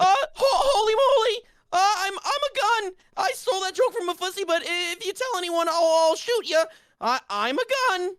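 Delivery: stuttering cartoon voice, pitched very high. A speaker does a cartoon voice for the others: stuttering Morty impression. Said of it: "doing this voice".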